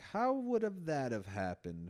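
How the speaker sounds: almost sarcastic, swooping put-down tone. Retelling how people come in and react when something happens, mock-sarcastic. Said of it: "Like very almost sarcastically".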